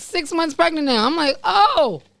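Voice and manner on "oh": high, stunned little "oh".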